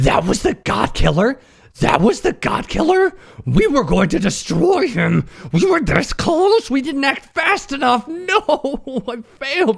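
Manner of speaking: very high, shrill, escalating furious tantrum. A player voices their character in a game, throwing an absolute fit. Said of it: "my character is gonna throw an absolute fit".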